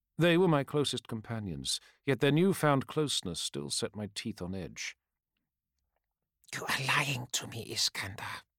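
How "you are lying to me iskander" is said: softly spoken. A woman confronts her companion about why he is here, softly. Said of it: "she said softly".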